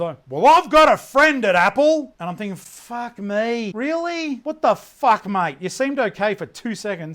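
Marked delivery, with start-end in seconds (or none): 0.3-2.1 very loud, high, pompous blustering boast. Telling a story about a man, the speaker imitates him in a very loud voice. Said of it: "in a very loud voice".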